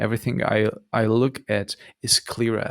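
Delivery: ordinary delivery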